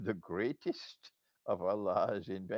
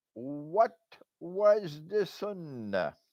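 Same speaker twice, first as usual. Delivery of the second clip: emphatic raised voice, slow and pitched up; 9 semitones higher, 7 dB louder than usual. Asking the listeners a question a second time: raised voice.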